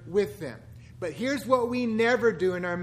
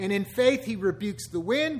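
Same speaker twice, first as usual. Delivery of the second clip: ordinary talk, nothing marked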